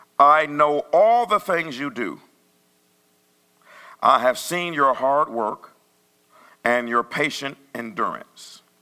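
slow deliberate reading. Rereading a passage aloud after deciding to go slower: reading slower. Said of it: "I'm going to read this slower".

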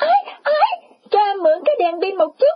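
sudden, loud, very high-pitched shout. Giải Thiện suddenly speaks up: shouting loudly. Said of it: "bỗng cất tiếng la bai bãi".

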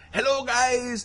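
Scandinavian accent impression. Retelling the end of a video, the speaker quotes a guy with a Scandinavian accent impression. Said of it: "his Scandinavian accent was coming through".

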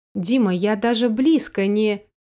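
plain reading voice

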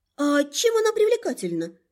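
astonished, swooping pitch. First-person narrator replying to an explanation, surprised. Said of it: "удивилась я".

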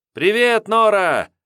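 wild, frenzied, shrill, very high yell. A boy greets a woman he is glad to see: frenzied shout. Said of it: "неистовым голосом закричал".

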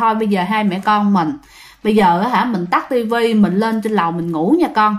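ordinary talk, nothing marked

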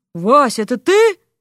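incredulous, hardly believing tone. Narrator reads a warrior answering Vasya's call, unbelieving. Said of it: "неверяще отозвался богатырь".

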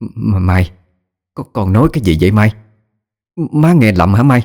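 stunned, stammering in shock. Mrs. Lan, stunned by what her daughter Mai just said, asks her: stammering in shock. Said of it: "bà lắp bắp nói".

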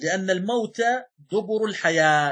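ordinary delivery

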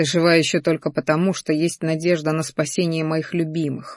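ordinary delivery

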